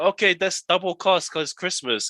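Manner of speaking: put-on high Chinese-accented woman's voice. Retelling a phone call to book a night market stall: imitating a Chinese lady. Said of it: "a Chinese lady at the end".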